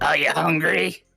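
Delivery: put-on fifty-year-old woman with smoker's voice. Voicing a diner girl who asks if you're hungry: fifty-year-old greek diner woman, smoker's voice. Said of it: "smoker's voice".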